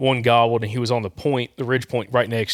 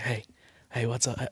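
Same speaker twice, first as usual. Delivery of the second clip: barely audible, very quiet half-whisper; 9 dB quieter than usual. Retelling how a hunting buddy greeted him: imitating someone half-whispering. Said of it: "he starts whispering".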